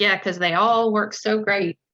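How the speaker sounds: mock dry sarcastic tone. Describing how a man jokes as his way of being sarcastic: mock sarcastic. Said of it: "being sarcastic".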